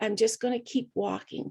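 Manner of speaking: ordinary talk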